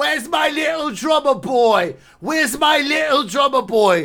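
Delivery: put-on very high, very drunk calling voice. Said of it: "[name] got stupid drunk".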